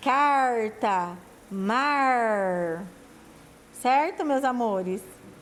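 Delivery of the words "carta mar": caipira r pulled in carta and mar, mar stretched. Portuguese lesson on how caipiras pull the R: caipira R in carta and mar. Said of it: "o jeito dos caipiras falarem, né, de puxar o R".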